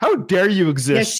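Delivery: scornful put-on voice. Voicing a film character who is scowling at Rocky: scowling scornful voice. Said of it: "she's already scowling at Rocky".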